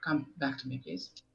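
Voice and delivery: hushed whisper. Calling a small creature back in a game: whispering. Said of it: "I whisper".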